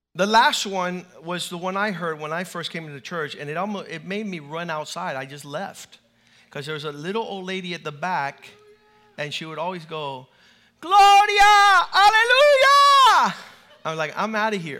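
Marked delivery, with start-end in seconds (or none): 10.8-13.4 very high, very loud, shrill, exuberant outburst. Recalling a little old lady at the back of the church, imitating an exuberant religious outburst. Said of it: "the outburst of religious exuberance".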